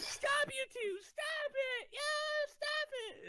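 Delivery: acted-out scolding yell, very high, slow, drawn-out. Retelling a fight at school, imitating the teacher screaming at them. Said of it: "screaming at us".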